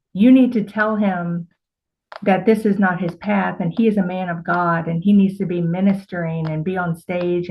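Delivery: ordinary delivery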